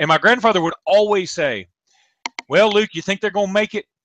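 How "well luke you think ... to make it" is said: acted, fast, heavily sarcastic voice. Retelling what a grandfather always said after the commercials, imitating a very sarcastic tone. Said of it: "in a very sarcastic tone".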